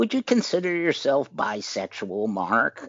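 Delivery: put-on smoker's voice, a bit high. Recalling his mother asking him a question late in her life, imitating her smoker's voice. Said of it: "she had this, smoker's voice, and she said".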